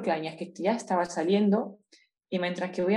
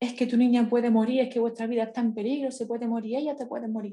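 put-on shouting, higher-pitched; 5 semitones higher than usual. Recalling how the pediatrician began shouting at her in the hospital, retelling a doctor's shouting. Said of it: "empezó a gritarme".

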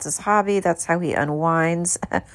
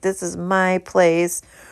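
plain

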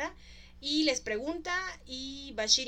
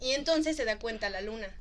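ordinary talk

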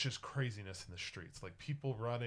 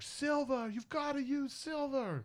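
put-on very high yelling, each word stretched out; 4 dB louder than usual. Voicing a townsperson in a vampire attack, shouting to the others: shouting. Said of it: "someone is just shouting".

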